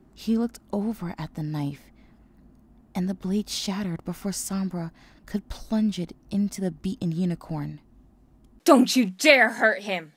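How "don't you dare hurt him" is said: very loud, defiant yell. A colt confronts his father over the beaten unicorn with a defiant yell. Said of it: "Inferno yelled in defiance".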